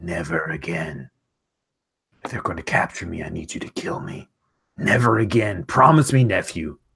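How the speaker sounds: low growled words from the throat. An uncle grabs his nephew by the fur and demands a promise; growling. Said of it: "he looks at you and he growls".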